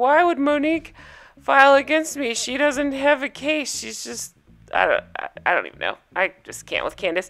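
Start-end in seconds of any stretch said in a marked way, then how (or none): 0.0-4.3 high, weepy, teary crying voice. Retelling how Candace ended the last episode: imitating Candace crying. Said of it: "ended the episode, like, crying".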